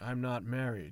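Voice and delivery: ordinary talk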